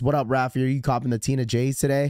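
ordinary talk, nothing marked

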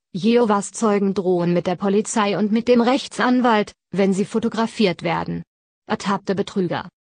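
ordinary talk, nothing marked

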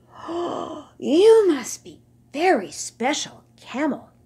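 slow, high-pitched, sighing delivery. The young camels speak to the old camel they look up to, sighing. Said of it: "they sighed".

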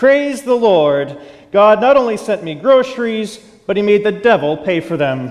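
mock happy, exultant, mildly joyful outcry. Telling of a lady jumping and clapping over her groceries, retelling her shout. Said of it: "jumping up and down and clapping her hands, and she shouted out".

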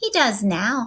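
ordinary delivery

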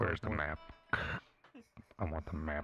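put-on villain voice.

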